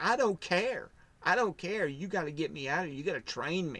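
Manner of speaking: acted-out broken, tearful, desperate pleading with crying. Retelling what they said to him while broken and crying, imitating a crying plea. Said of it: "just crying".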